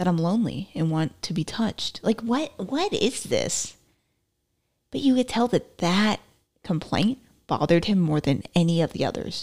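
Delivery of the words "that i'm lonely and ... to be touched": usual speaking voice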